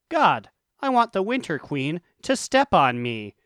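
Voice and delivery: ordinary talk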